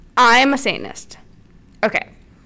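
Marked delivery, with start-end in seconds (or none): none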